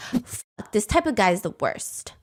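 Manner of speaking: quiet mutter. Retelling how she breaks the silence about the guy: imitating a mutter. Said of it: "she mutters".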